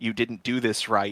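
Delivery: ordinary talk, nothing marked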